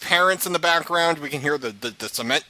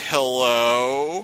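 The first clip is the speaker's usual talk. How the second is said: put-on grave, serious-sounding voice; 3 semitones lower than usual. Retelling how Jen answered the phone: imitating Jen's dire-news phone voice. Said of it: "That's the voice that Jen uses".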